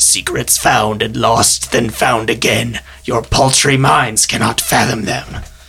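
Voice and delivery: low, raspy, hoarse-throated voice. Narrating a scene, the figure from the hidden door speaks, in a hoarse voice. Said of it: "In a hoarse voice".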